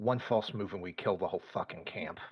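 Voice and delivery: quick, low half-whisper muttered under the breath. Passing another character and half-whispering in their ear: quick muttered half-whisper. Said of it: "really quickly whisper in Raven, like, mutter".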